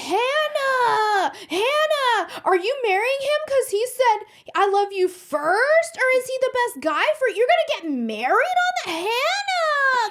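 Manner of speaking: epic, ranting, yelling tantrum, very high-pitched. Retelling what a man said to hannah, imitating a man's tantrum. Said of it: "He throws the most epic tantrum".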